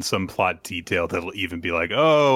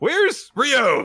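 puzzled, confused-sounding tone. Showing how they will ask whenever Ryo is off screen: confused tone. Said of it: "in a much more, like, confused tone of voice".

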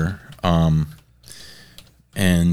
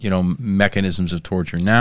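normal talking voice

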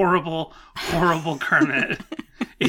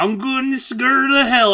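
deliberately poor, high fake voice; 8 semitones higher, 4 dB louder than usual. Trying a line after failing at another voice: bad Kermit impression. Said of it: "I'm just doing a bad Kermit impression".

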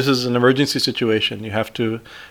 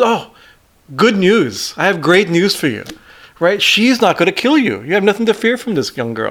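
pitched-up, cheery, bright reassuring tone; 7 semitones higher than usual. Describing Narada in the Devaki Dev Mahadev videos: imitating Narada smiling. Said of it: "Like he's smiling".

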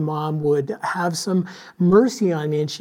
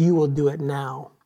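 put-on very authoritative, commanding voice. Retelling your mom ordering you, in an imitated very authoritative voice. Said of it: "in a very authoritative voice".

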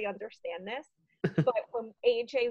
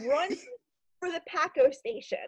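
mock high-pitched screaming; 7 semitones higher than usual. Retelling screaming at someone on a FaceTime call: retelling own scream. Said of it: "And I was screaming".

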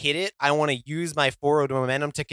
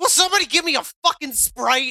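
shrill, very high, offstage-sounding shout; 11 semitones higher, 3 dB louder than usual. Acting out a character backstage after a win: Vape Lord shouting. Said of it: "you just hear him shout".

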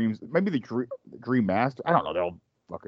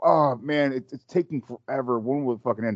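ordinary delivery

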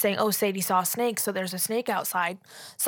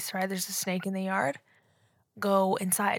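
put-on calm voice, much quieter; 6 dB quieter than usual. Retelling how they walked up and warned their sibling, retelling speaking calmly. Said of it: "I walk up to my sibling calmly".

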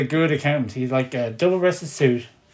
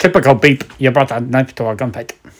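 put-on Scottish accent in a lower pitch; 2 semitones lower than usual. Quoting Sean Connery's character's movie line to the group, Sean Connery impression. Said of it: "That's very Scottish".

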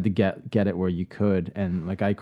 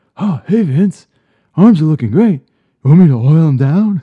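very loud, high-pitched call; 8 semitones higher, 14 dB louder than usual. Doing a podcast host's impression of a wrestling executive: Johnny Ace impression. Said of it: "Johnny Ace is my favorite".

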